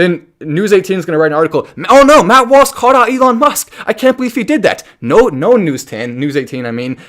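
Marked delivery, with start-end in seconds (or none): 1.9-4.8 very high, shrill, loud, sarcastic mock outrage. Imitating a news outlet writing an article: sarcastic mock outrage. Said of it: "That is sarcasm once again".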